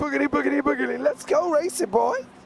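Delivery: poorly done put-on American accent. Quoting Darrell Cartrip's catchphrase, from Lightning McQueen: Darrell Cartrip in poor American accent. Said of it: "In his best American accent".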